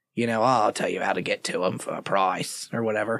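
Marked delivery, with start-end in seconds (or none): 0.4-2.7 put-on Australian-sounding merchant accent, lower, quieter. Voicing an information broker who sells directions: Resident Evil 4 merchant voice. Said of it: "why did he go all Australian there".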